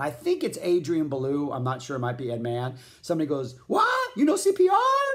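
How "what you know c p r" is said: high, loud, crazy yelling voice. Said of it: "And yells, like, in this crazy voice".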